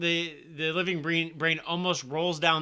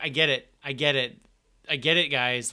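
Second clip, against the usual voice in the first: normal talking voice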